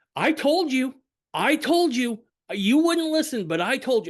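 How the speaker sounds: play-acted, shrill, very high, loud shouting. Retelling what Hannah said after slapping the table: imitating someone shouting. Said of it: "she's shouting it".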